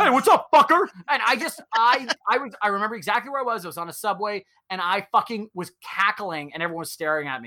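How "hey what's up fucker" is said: very high, shrill, loud, belted voice. Retelling a podcast bit, imitating Santa Claus. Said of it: "and Santa Claus goes".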